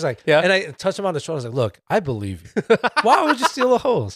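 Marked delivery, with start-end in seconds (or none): 1.5-4.2 condescending, patronizing sing-song, pitched up. Retelling what they said to him while touching his shoulder, mock-condescending. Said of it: "It sounds more condescending".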